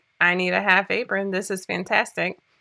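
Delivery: ordinary delivery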